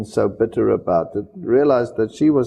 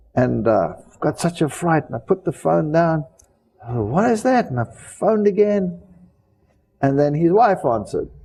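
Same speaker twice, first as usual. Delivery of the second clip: plain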